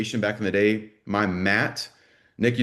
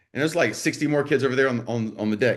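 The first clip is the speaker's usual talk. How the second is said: ordinary talk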